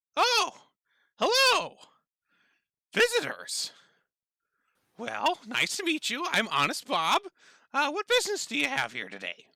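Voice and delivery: very high, loud, swooping, squeaky sing-song imp voice. The narrator voices an imp greeting visitors who come around the corner: Honest Bob imp voice. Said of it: "what you recognize to be an imp".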